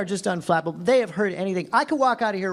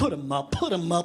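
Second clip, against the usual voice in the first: comic, scaredy cowardly lion voice; 3 dB quieter than usual. Trying to make a threatening bully laugh, in a Cowardly Lion voice. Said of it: "doing the Cowardly Lion from The Wizard of Oz".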